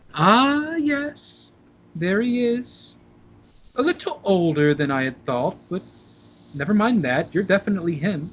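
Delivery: put-on kindly, warm, high elderly woman voice. A storyteller voices an old woman greeting the player, smiling warmly. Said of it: "She smiles warmly at you".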